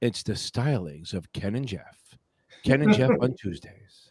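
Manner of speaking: sultry, low, smooth late-night radio DJ voice. Host introducing the Tuesday show to the chat, in a sexy podcast voice. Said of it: "put my sexy podcast voice in".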